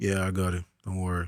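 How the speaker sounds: low, soft, straight-faced deadpan calm. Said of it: "it's like straight face".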